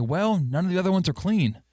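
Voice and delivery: put-on high, passive-aggressive tone. Acting out a complaint about wearing a shirt: acting passive-aggressive. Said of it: "And I'll say".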